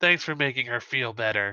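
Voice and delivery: hushed, quiet whisper. Voicing a hat that quietly thanks the player character: whispering. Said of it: "he'll sort of whisper to you".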